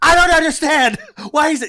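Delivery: put-on very high, very loud, shrill little girl screaming. Retelling a little girl in the backseat screaming over him: imitating a screaming child. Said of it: "she is now screaming like a little fucking guinea".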